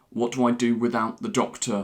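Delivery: ordinary delivery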